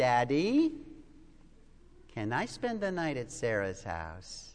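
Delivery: sweetest coaxing voice, very low, swooping. A father retells his little girl asking a favor, imitating Carrie's sweetest voice. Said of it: "with her sweetest voice she says".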